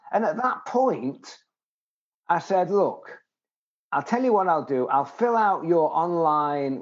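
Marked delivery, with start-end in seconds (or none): none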